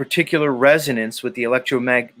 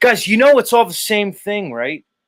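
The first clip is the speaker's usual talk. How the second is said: high, screaming, yelling, ranting voice; 9 semitones higher, 4 dB louder than usual. Ranting to viewers about frequencies, screaming at the viewers. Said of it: "I don't know why I'm screaming at you".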